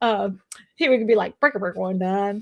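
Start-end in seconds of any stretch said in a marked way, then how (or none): 1.4-2.4 put-on southern accent, CB radio style. Speaker imitates their dad from New England, imitating dad's southern accent. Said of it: "Why are you talking with a like a southern accent?".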